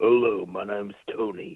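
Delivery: put-on deep voice. Greeting the hosts as a caller, put-on deep voice. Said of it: "It's J T doing his voice".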